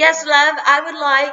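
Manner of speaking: high put-on British accent. Retelling a friend ordering at McDonald's: imitating a British accent. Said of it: "starts ordering in a British accent".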